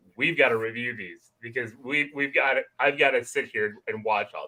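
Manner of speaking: ordinary delivery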